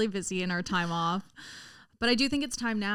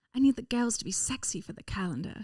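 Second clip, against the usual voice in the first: rich-sounding socialite voice; 2 semitones higher than usual. Asked by another speaker to say the line: Lisa Vanderpump voice. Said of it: "we're Lisa Vanderpump now".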